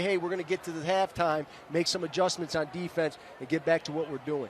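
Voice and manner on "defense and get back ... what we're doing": normal talking voice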